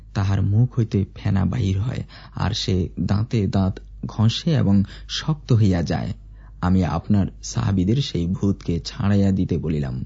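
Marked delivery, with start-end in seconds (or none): none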